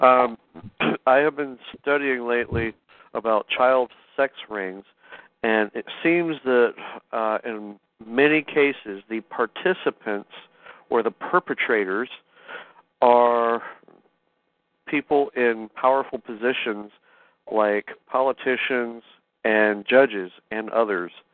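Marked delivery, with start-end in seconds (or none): 1.1-21.1 slower, careful, deliberate delivery. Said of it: "could you say it again slowly?".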